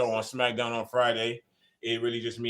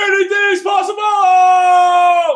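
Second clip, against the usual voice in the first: very high, very loud, tearful crying scream, possibly drawn out; 18 dB louder than usual. Retelling an athlete's sideline interview after winning the title: imitating a crying scream. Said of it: "he screamed into the top of his lungs like he was crying".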